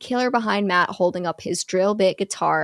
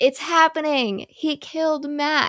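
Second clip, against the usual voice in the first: high, tearful, sobbing scream; 7 semitones higher than usual. Retelling a horror movie scene, imitating Courtney crying and screaming. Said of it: "she's crying and screaming, saying".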